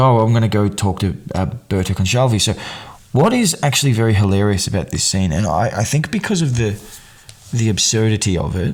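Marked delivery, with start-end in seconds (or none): none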